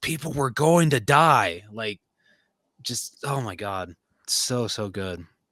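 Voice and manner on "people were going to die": sudden blurted, shouted outburst. Retelling a scene where he finally snaps under questioning: imitating a shout. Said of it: "he just shouts".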